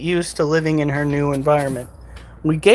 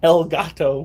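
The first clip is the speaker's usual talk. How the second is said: thickest American accent, laid on "el gato". Saying a Spanish phrase in a very thick American accent. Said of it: "I said that with the thickest American accent I think anybody possibly could".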